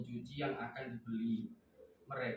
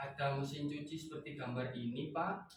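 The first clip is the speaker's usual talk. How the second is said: rising, question-like tune on Pak. Reading an example sentence that ends in a question mark: question intonation. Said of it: "Jadi kayak ada intonasi yang berbeda ketika ada tanda tanya".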